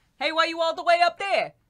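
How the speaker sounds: put-on New York accent. Acting out Romeo and Juliet with the other speaker: New Yorker accent. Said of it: "like, New Yorker accents".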